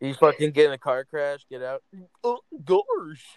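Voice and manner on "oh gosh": very high-pitched cartoon dog voice. Speaker imagines Goofy getting out after a car crash, doing a Goofy impression. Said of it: "Fucking Goofy. Gorsh".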